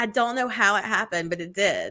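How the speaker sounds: normal talking voice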